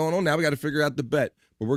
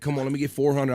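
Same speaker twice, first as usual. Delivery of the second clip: ordinary delivery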